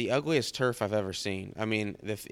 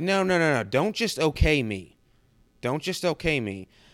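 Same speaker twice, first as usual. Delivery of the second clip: put-on coach voice, high, insistent yelling; 5 semitones higher, 6 dB louder than usual. Retelling a phone call with a head coach: imitating a coach yelling. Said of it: "Why are you yelling?".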